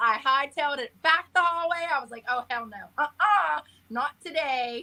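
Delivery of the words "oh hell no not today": mock spooked, emphatic, flat, drawn out. Retelling fleeing after something fell off the shelf: imitating own freaked-out reaction. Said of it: "I screamed, freaked out".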